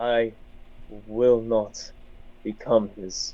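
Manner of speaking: low, slow, grim voice.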